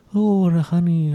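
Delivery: high cartoon bear voice. Player trying out a voice during a game, Winnie the Pooh voice. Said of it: "I was trying to do Winnie the Pooh where he's like".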